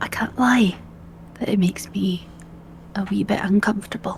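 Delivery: hushed, confiding, leaning-in whisper. Leaning in to admit unease without hurting someone's feelings: whispering. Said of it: "I kind of lean in and whisper".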